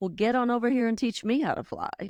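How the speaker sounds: strong, unweakened, full voice, lifted in pitch. Retelling a frail woman suddenly speaking while they held her hand: imitating her full voice. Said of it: "in her full voice".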